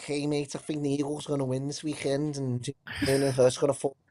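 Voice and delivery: put-on Liverpool accent. Showing what a Liverpool Scouser sounds like: Scouse accent. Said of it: "That's a great accent".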